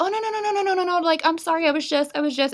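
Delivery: acted sweet, feminine, high, gushing apologetic tone. Retelling how a stranger at the door apologized to a man: imitating a sweet, feminine apology. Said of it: "gets all feminine and sweet with him".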